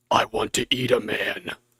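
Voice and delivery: very slow, drawn-out, frightening horse voice. Speaker recording a horse character's line: really scary horse voice. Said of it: "the horse needs like a really scary voice".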